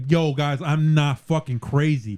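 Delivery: ordinary delivery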